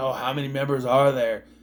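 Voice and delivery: ordinary talk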